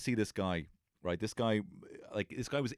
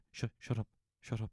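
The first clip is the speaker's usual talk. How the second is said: shut up without raising volume, quieter; 5 dB quieter than usual. Recalling thirty lads talking at once, telling them to shut up without raising volume. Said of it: "just at the same volume".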